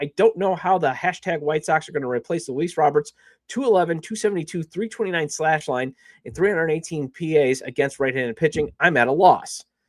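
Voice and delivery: ordinary talk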